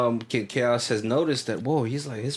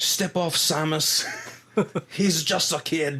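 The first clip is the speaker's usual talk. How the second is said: put-on light, subtle Irish accent, pitched up; 5 semitones higher than usual. Show how the wrestler talks when not playing to the crowd, toned-down Irish Sheamus impression. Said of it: "it's it's there".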